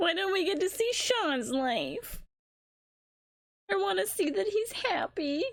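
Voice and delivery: crying while talking, high. Reacting to a game's ending and wanting to see sean happy: tearful, crying while talking. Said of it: "You can't stop me from crying".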